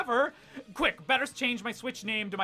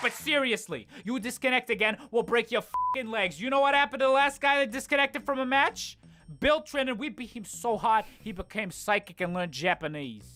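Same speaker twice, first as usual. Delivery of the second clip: put-on tough-guy mafia mobster voice. Voicing a game's disconnect warning as a threat, in a mafia mobster voice. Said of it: "as if delivered by a mafia mobster".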